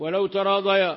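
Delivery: plain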